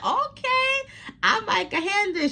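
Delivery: high, sweet Southern voice.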